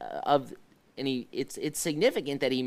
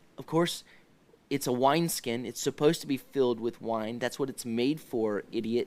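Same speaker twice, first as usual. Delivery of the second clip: ordinary talk, nothing marked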